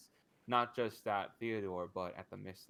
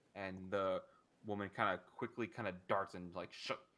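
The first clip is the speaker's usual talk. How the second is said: plain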